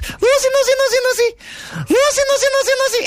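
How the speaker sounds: put-on very high old-lady voice, calling out.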